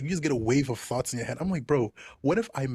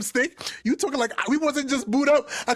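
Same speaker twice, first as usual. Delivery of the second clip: usual speaking voice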